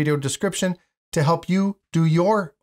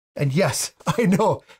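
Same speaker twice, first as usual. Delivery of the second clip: usual speaking voice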